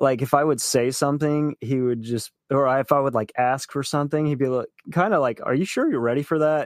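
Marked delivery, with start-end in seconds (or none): 5.4-6.7 play-acted doubting, dry sarcastic challenging tone. Retelling what a spirit guide said when asked for something: imitating a sarcastic remark. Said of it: "he was sarcastic".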